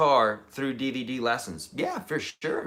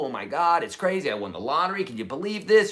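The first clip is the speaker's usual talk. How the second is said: thrilled, excited, disbelieving gush. Acting out calling people after winning the lottery: pretend excited disbelief. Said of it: "You'd be calling people".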